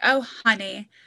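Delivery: put-on condescending voice. Imitating a tv stepmom saying honey: imitating a condescending stepmom. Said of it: "the stepmom is super condescending".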